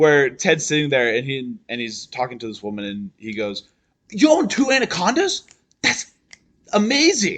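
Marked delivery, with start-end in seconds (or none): 4.1-7.4 play-acted, over-the-top gushing amazement, pitched up. Recounting Ted Mosby talking to a woman at a bar, mock-amazed Ted Mosby line. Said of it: "That's too over the top".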